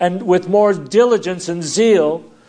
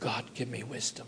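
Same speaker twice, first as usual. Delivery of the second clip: near-silent, barely audible, breathy whisper; 8 semitones lower, 23 dB quieter than usual. Showing how we normally ask God for wisdom: barely audible. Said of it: "if you didn't hear me, you know, humanly speaking, God didn't hear it".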